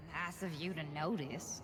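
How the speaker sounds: sneering, cutting tone. Voicing the sword Modwa answering a compliment: sneering. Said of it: "what can only be a sneer edge, Modwa's voice".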